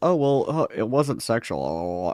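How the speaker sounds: mock, very slow, drawn-out, sneering lame-excuse tone. Predicting the others' excuse for Lyle: mocking a stupid excuse. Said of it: "We're gonna do the stupid".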